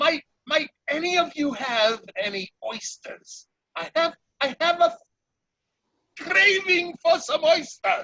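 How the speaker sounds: very high, otter-like creature voice. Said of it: "Quite otterish".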